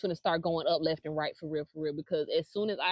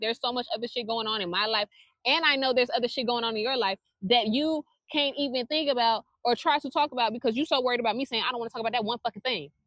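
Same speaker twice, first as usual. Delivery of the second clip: angry, heated rant boiling over, pitched up; 6 semitones higher, 4 dB louder than usual. Telling someone they keep dragging up a topic after a stated boundary: angry, heated rant. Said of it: "I'm sorry, I'm getting angry again".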